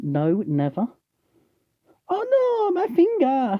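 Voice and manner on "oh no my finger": very high, very slow, drawn-out silly cry. Marking wood with a scalpel, joking about cutting a finger, wood-chipper voice. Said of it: "my wood going in the wood chipper voice".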